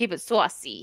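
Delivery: put-on New York accent. Thanking a gifted member, the speaker repeats the phrase in a new york accent. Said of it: "Keep it saucy in a New York accent".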